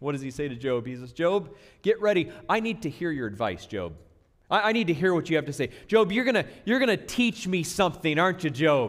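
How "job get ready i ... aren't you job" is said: thick, heavy, swooping, dripping sarcasm throughout. Explaining a scripture passage, doing a mock-sarcastic God voice. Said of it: "Just kind of dripping with this sarcasm in God's voice".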